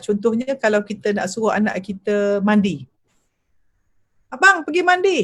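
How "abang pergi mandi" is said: very high, flustered, uncalm, agitated call. Demonstrating how an uncalm parent tells their child to go bathe: not calm. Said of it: "kalau orang tak tenang ni, dia panggil dalam beta".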